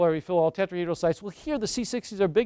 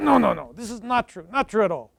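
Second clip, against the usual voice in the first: English spoken with a put-on Russian accent; 2 semitones higher than usual. Retelling how he answered the speaker's question, in a deep russian accent. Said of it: "In his deep Russian accent".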